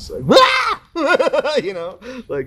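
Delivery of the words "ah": high, loud excited scream. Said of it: "and I screamed".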